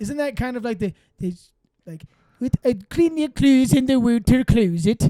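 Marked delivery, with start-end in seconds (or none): 2.4-5.1 fake Belgian accent, higher and louder. Answering a request for a belgian accent: put-on belgian accent. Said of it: "Hit me with your best Belgium accent".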